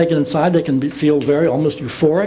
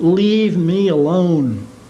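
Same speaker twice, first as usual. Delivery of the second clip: put-on fierce, very intense, forceful insistence. Recounting what people under hypnosis have said: retelling a very intense tone. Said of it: "in this very intense tone".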